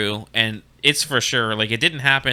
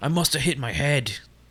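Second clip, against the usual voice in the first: put-on New Zealand accent, Kiwi style; 3 semitones higher, 3 dB quieter than usual. Recapping an episode, quoting a character rubbing his head: new zealand accent. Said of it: "It's my New Zealand accent".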